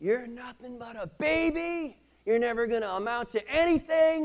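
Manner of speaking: put-on shrill, loud, very high baby scream, drawn out. Retelling yelling across a dusty shop at a coworker: retelling own screaming. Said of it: "I just started screaming at him".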